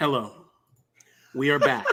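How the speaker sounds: put-on ASMR podcast-style voice. Podcast host opening the show, in a mock ASMR voice. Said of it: "this is my S M R voice".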